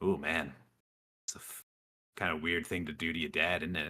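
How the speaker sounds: little voice of a tiny devil. Narrating to a player, voicing a tiny devil who appears, tiny devil's little voice. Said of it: "you hear a little voice uh".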